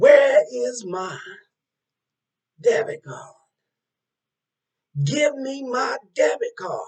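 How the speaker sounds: very loud, drawn-out, demanding yell. Retelling a guy at the ATM demanding his debit card: imitating a man yelling. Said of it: "the guy yells out again".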